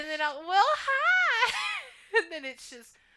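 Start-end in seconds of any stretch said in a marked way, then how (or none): 0.5-1.5 put-on dialed-up Texas accent, high-pitched and loud.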